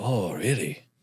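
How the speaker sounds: quick, soft put-on Japanese accent. Retelling a conversation with a man who had a thick Japanese accent, imitating a Japanese accent. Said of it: "Sorry for the Japanese accent".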